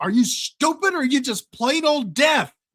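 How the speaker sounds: barking drill sergeant voice. Retelling a movie scene of a man yelling at a deaf guy, imitating someone yelling. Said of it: "he's yelling at the deaf guy".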